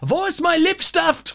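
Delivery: put-on very high, raging, furious teenage voice. Retelling a favorite line from a show: imitating a girl in a rage. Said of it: "walks through the house in such a rage".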